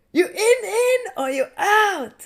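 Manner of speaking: put-on girl's accent, pitched very high. Retelling how a girl came up to him, the speaker imitates a girl's accent. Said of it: "in an accent".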